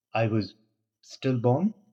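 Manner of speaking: ordinary delivery, nothing marked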